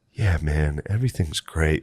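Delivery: dead-level, droning, flat monotone with no lift. Speaker recalling being out of it and hallucinating, imitating Butterly's monotone. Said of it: "Like this real monotone thing".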